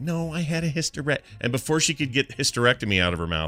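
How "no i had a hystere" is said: very quiet, pitched up, breaking off. Retelling how mom answered John about the hysterectomy: imitating someone speaking very quietly. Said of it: "she's saying it very quietly".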